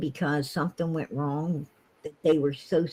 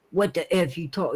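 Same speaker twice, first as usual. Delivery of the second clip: put-on defensive retort. Retelling how a man reacts when criticized: imitating Don Wells getting defensive. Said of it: "he gets real defensive".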